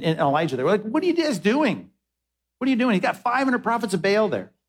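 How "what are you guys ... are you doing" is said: high sarcastic jab. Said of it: "there's so much sarcasm in, in [name] there".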